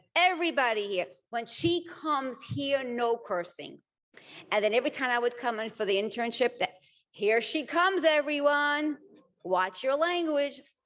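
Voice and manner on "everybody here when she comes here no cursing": announcing tone, declared broadly. Retelling how a man at her internship got up to address everyone: big, loud, booming voice. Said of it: "a big, loud, booming voice".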